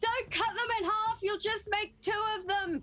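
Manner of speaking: mild, called-out yell. A character sprinting to get in range during combat, yelling. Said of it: "is just yelling".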